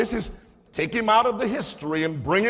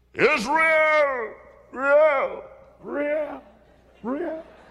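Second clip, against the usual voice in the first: huge, drawn-out, booming giant's bellow; 6 semitones higher than usual. Retelling a bible scene, the speaker voices one of the big people: big voice. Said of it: "his voice has to sound different because all of those people who are big have big voices".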